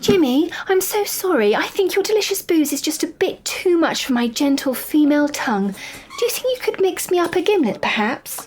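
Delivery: sugary sweet tone. A woman turns back in her seat to address Jimmy, in a sweet voice. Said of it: "in a sweet voice said".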